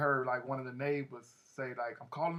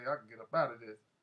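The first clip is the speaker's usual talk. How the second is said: ordinary talk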